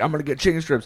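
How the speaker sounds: acted out, pumped, hyped-up, excited delivery. Recalling a drunk night at the bar; retelling hyped-up excitement. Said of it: "hyping it up like all night".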